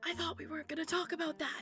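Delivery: hushed whisper. In a game, a player's character turns to a companion and speaks: whispering. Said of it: "just whispers".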